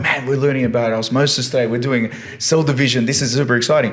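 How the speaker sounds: upbeat, hyped-up, enthusiastic, peppy delivery. Showing how they sound teaching in class: imitating own loud teaching voice. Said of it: "whenever I teach in the classroom, I'm very loud".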